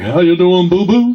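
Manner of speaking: loud, booming, thick, full character voice from chest. Teaching voice resonance, the speaker demonstrates a chest-resonant character impression. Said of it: "that might sound like him".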